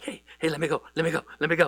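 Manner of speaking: keen, eager, puppyish begging tone. Retelling a Bible story, voicing Ahimaaz begging to go: acting eager like a little puppy. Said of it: "Ahimaaz is like a little puppy".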